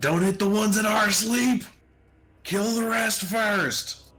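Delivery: very high, shrill, high-pitched shout. Ordering the party in the middle of a fight: in-character shout. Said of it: "shout out".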